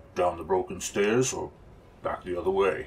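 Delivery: gruff, burly fighter-like voice. Narrating a story, voicing Mala asking the group which way to go, gruffly. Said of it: "While the big fighter kept watch".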